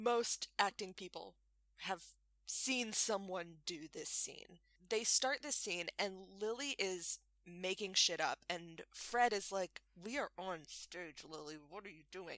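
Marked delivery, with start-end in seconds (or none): 10.0-12.4 muttered under breath, much quieter and lower. Retelling what an actor said to his scene partner on stage, muttered under breath. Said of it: "like under his breath".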